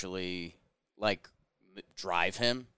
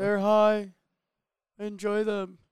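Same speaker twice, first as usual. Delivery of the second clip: put-on high-pitched voice, higher and louder; 13 semitones higher, 6 dB louder than usual. Imitating a player's post-game line: imitating a high-pitched voice. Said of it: "Jake does a real good impression".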